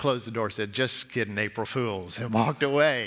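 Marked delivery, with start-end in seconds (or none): 0.7-2.2 low, quiet, villainous put-on tone. Retelling an April Fools prank played on the kids, in a mock-evil tone. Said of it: "in the evil tone that I had".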